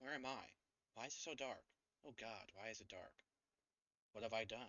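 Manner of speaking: soft, lost, ghostly calling voice. Sharing with the party what their characters hear, voice of a departed innocent. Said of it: "You hear a voice as if a departed innocent".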